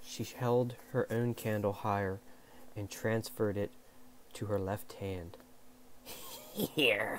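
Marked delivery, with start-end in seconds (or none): 6.5-7.2 sly little snicker while speaking. An unseen voice answers Sabriel's question; snickering. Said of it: "snickered the voice".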